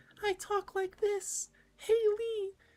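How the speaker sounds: put-on sweet, innocent child voice, very high and slow. Discussing Clem's character, the speaker imitates her earlier voice: sweet innocent Clem voice. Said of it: "from like the very sweet and innocent".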